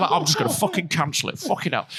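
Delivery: ordinary talk, nothing marked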